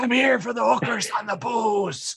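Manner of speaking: hushed half-whisper. Telling a library joke, the patron repeats his request: half-whispering. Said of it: "He whispers".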